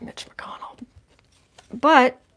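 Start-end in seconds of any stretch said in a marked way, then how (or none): 0.0-0.8 teeth clenched, quieter. Reading a card result aloud, said through gritted teeth. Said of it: "I'm saying that through gritted teeth".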